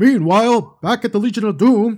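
big, loud announcer voice. Recalling the old Justice League cartoon narration: Don Pardo voice. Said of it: "with the old voice, Don Pardo, he would be like".

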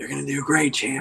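low-pitched, soft, encouraging voice. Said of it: "he turns to you, Wee Woo, and he goes".

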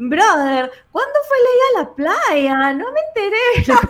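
loud, very high, showy little tone. Retelling how Steph came into the office and asked a question, imitating Steph's little tone. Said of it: "Así con ese tonito".

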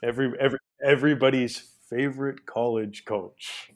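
mocking, sarcastic approval. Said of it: "you can't sense the sarcasm in my voice".

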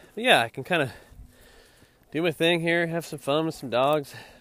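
panting talk. Talking about walking dogs while climbing a hill, with heavy breathing. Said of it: "excuse all my heavy breathing".

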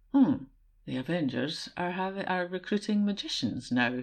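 dry, understated drawl with light teasing mockery. Quoting a film scene to another speaker: imitating Thor's deadpan, slightly mocking tone. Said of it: "in that very kind of deadpan, um, slightly mocking tone that, that Thor just, just nails".

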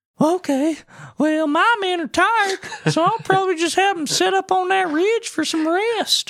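very high, badass tough-guy Marine voice. Retelling a colonel's reply about his tired men: badass American Marine voice. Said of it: "badass American Marine got that voice".

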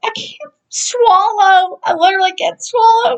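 mock crying, very high-pitched tearful pleading. Retelling being ill with strep throat: imitating own past crying. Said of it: "And I'm like crying".

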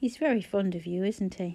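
ordinary delivery

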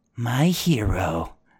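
whispered voice. Narrating a wounded man who whispers into your ear, whispering. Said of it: "he whispers into your ear".

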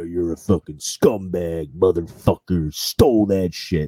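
mock furious, angry ranting tirade. Speaker retells how a man ranted: imitating his rant. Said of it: "he just fucking ranted".

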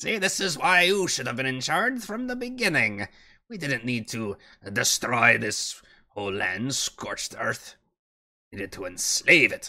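put-on cold, condescending old dwarf matriarch voice. In a role-play game, speaking as a scheming old dwarf matriarch.

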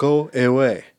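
put-on South African accent. Recalling a single line from a childhood movie: imitating it in south african accent. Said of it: "spoken in this accent and tone".

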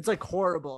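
ordinary talk

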